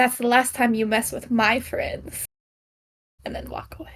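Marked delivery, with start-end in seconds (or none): 0.0-2.2 quiet threatening whisper, quieter. Voicing a character who whispers to a man in a hole: whispering menacingly. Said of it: "And I just whisper".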